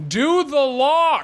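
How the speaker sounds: mild mock yell, high and slow.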